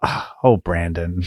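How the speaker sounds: put-on disappointed tone. Retelling what the wife said when she opened the door: imitating a disappointed tone. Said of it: "the disappointment in her voice".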